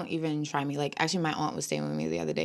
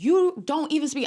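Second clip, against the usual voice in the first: very high, furious, angry yelling; 12 semitones higher, 7 dB louder than usual. Recounting a screaming match in the foyer, retelling yelling at a man. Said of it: "I'm like yelling at him too".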